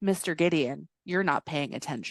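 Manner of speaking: acted cool-as-a-cucumber tone. Retelling a film scene where Eric speaks from the ceiling: imitating a calm, cool delivery. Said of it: "just cool as a cucumber".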